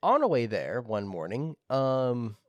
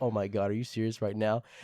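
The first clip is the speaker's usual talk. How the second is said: mock let-down, dismayed, disappointed teacher voice; 2 semitones lower than usual. Retelling the teacher's reaction to the student's remark: imitating a disappointed teacher. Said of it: "our teacher's, like, so disappointed".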